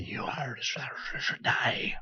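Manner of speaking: very quiet, hushed, barely voiced whisper. In a role-playing game, a player addresses a creature, whispering. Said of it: "Just in whispers".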